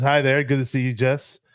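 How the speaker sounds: usual speaking voice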